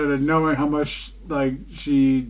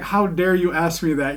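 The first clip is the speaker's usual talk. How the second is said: ordinary talk, nothing marked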